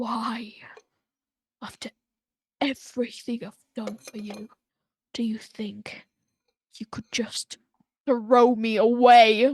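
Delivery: loud two-tone yell, sweet on top, stretched, rumbling underneath. Voicing Maga as she yells at the listener: two-tone beastly yell. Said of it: "her voice is is two-tone ... deeper rumbling that's coming out like a beast".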